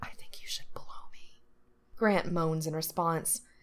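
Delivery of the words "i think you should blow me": very quiet, breathy, barely voiced whisper. Narrator reads Frank tugging Grant's head down to speak in his ear; whisper. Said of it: "whispers in his ear".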